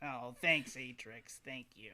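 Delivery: put-on animated sixteen-year-old boy voice. Voicing a boy thanking his talking book: Barnabas character voice. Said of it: "he'd be like".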